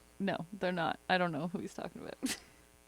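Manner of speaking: put-on very soft, low, hushed, bone-dry deadpan. Retelling her answer when asked if the stories were about her, retelling a deadpan denial. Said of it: "And I fucking deadpan".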